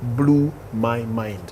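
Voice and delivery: slow, soft delivery. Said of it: "Say it slowly".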